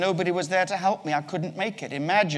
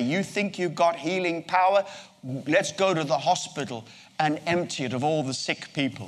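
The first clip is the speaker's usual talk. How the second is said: normal talking voice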